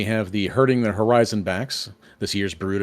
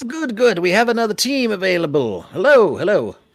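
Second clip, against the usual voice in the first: put-on very high, old goblin voice; 10 semitones higher, 4 dB louder than usual. A game master voices an elderly goblin as the party approaches, elderly goblin voice. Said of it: "the sort of elderly goblin hops down".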